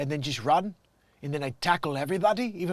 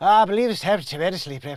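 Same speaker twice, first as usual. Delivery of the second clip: put-on Irish accent, higher and louder; 2 semitones higher, 6 dB louder than usual. Trying out a line in different accents, the speaker switches to an irish accent. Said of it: "maybe it's better at Ireland instead".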